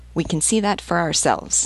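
ordinary delivery

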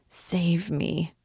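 whispering. The poor devil turns to a young girl, whispering. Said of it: "whispered the poor devil".

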